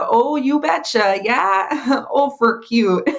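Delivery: Minnesotan accent. Show an interviewer the accent that makes you laugh, imitating a Minnesotan accent. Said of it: "Minnesotan accent is the number one thing".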